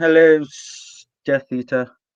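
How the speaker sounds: slow, dragged-out, miserable voice. Trying out a voice to greet a Death Eater: slow miserable Snape voice. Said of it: "I gotta work on that".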